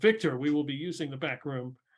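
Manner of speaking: ordinary delivery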